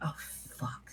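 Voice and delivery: hushed, whispered mutter under the breath. Reacting in character to a deciphered message: muttered under her breath. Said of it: "she says that under her breath".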